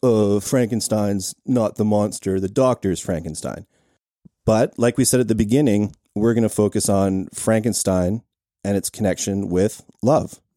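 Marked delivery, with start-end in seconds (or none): none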